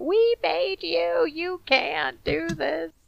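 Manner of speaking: acted, hoarse, unhinged, high, drawn-out rasping scream. Acting out a woman yelling after a departing truck, retelling a scream. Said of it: "She's just out there just screaming".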